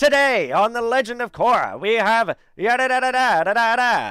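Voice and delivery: put-on very loud, very high old-timey radio announcer voice. A speaker demonstrates the voice they'd use as an old-timey radio guy, old-timey radio announcer voice. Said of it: "I'd want to totally be like an old timey radio guy".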